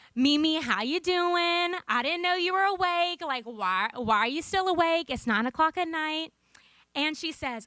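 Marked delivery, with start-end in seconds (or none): 0.2-6.3 put-on Southern accent. Greeting someone who just answered the phone late at night, in a Southern accent. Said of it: "This is my Southern accent".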